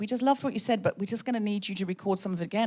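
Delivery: ordinary talk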